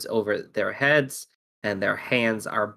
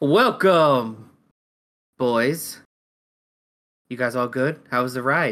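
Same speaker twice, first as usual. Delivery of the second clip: big, loud, booming voice from above; 3 semitones higher, 4 dB louder than usual. Retelling being untied after a ride, imitating a booming voice. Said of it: "you hear like a booming voice".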